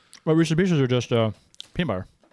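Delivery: talking with mouth full, chewing close to microphone. A host answers a co-host while eating at the microphone, talking while chewing. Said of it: "As I chew into the microphone".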